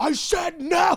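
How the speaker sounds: angry yelling.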